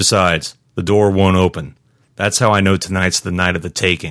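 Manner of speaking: ordinary talk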